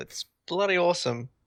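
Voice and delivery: emphasis on bloody. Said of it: "Emphasis on the bloody".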